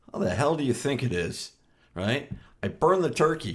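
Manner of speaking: put-on sarcastic tone. Acting out his reply when someone asks about his day, acting out sarcastic reply. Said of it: "I'd be more gar- more sarcastic".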